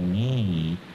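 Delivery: emphasizing 'me'. Answering the drill question 'Whom did she see?', stressing 'me'. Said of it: "Whom did she see?".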